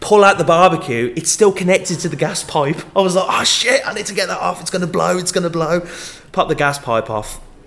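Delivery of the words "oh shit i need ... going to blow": blurted out in panic. Retelling the moment the barbecue was still connected to the gas pipe; retelling past panic. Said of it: "I'm panicking".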